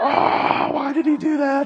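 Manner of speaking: high, baffled, puzzled voice.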